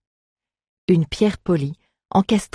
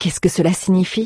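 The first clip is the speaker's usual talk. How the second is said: ordinary delivery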